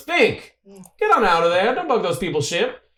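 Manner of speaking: shrill, very high-pitched shout. Narrating the scene, Buzz turns around and yells at Fink; Buzz yelling. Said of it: "Buzz turns around and yells".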